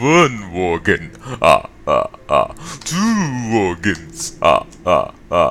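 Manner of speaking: very slow, swooping vampire accent. Trying out a voice while wearing a headset: the Count voice. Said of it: "I really wish I could do that accent".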